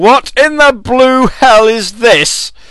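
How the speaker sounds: high, slow, baffled outburst.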